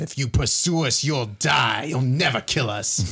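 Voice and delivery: loudest, most booming voice. A player speaks in character to the pursuers in a loud booming voice. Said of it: "in my loudest, most booming voice".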